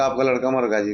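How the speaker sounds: usual speaking voice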